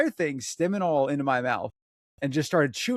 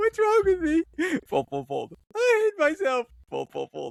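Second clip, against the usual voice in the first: mock crying and sobbing, much higher; 13 semitones higher than usual. Retelling folding laundry during hours of crying, imitating her own crying. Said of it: "I was just crying, doing laundry".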